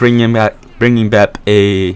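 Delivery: stuttering, slowed, stumbling repeated words.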